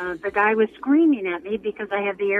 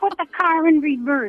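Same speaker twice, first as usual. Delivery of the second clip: put-on crabby, high-pitched screaming voice; 7 semitones higher than usual. Retelling a crabby instructor's orders during a license test: imitating someone screaming. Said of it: "he screamed".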